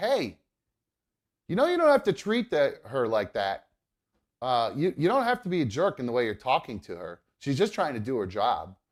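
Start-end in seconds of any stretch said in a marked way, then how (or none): none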